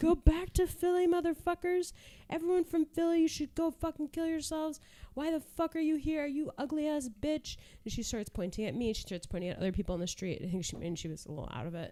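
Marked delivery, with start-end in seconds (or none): 0.0-7.6 mock very high, shrill, unhinged screaming. Recounting a woman on the street yelling at people, imitating a woman screaming. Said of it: "She's just screaming".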